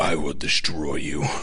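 low, anime rival character style voice. Joking that a character's final form still sounds like this, Seto Kaiba voice. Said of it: "it still has the Seto Kaiba voice".

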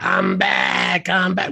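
slow, rough, drawn-out promo voice. Showing the catchphrase the hosts always imitate: imitating Seth. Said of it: "We always imitate Seth".

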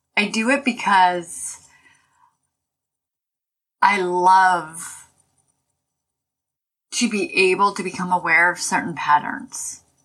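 tearful voice, close to tears. Talking about healing, tearing up while speaking. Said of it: "I'm tearing up here".

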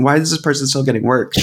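ordinary talk

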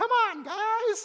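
very high, loud, rousing rallying call. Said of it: "here's Jesus with his own".

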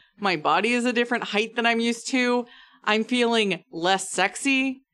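ordinary talk, nothing marked

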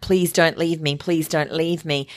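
ordinary talk

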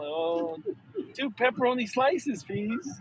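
meek, soft, timid, intimidated voice. Retelling stepping up to the pizza counter to order, imitating own timid voice. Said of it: "I was a little intimidated".

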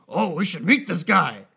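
loud, big comic-book creature monster voice. Imagining a post-credit scene where Venom speaks: Venom voice. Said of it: "Great Venom impression".

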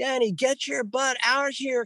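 acted, very high, shrieking yell. Retelling calling the wife outside to see flashes: imitating own screaming. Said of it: "I'm screaming to my wife".

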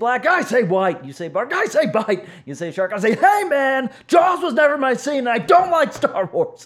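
very angry, pitch swooping and rising. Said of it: "I do that half in as angry a voice as I can summon up".

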